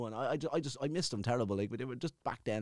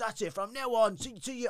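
higher-pitched put-on annoyed male stutter; 11 semitones higher than usual. Retelling what someone said to the speaker on army parade: imitating an annoyed stutter. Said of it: "he's real kind of stuttering 'cause he's, he's annoyed".

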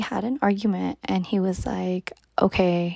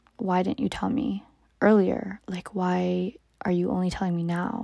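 mock crying, tearful voice. Retelling dad's question at the dinner table: imitating dad crying. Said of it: "crying as well, saying".

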